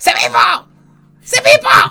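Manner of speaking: very slow, loud, high, drawn-out shout. Retelling yelling at one of their moderators in the city centre, retelling a tremendous shout. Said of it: "Así, tremendo grito".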